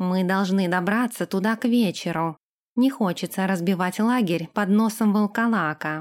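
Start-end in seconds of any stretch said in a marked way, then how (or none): none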